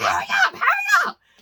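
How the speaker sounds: frantic top-of-lungs shriek, very high and panicked. Speaker retells calling Trey to come downstairs: retelling screaming at top of lungs. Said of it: "I'm just screaming at the top".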